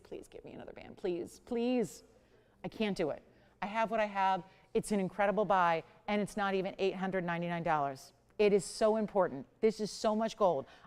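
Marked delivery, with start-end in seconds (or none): 0.0-2.0 put-on breathy, whispered pleading, "please" repeated. Imitating a caller phoning back tomorrow for more: mock begging. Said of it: "and beg and plead".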